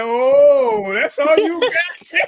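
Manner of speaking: dragged-out, loud, high drawl. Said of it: "[name]... She's like".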